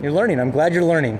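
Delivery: normal talking voice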